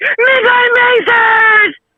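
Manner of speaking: very high, slow, drawn-out silly call.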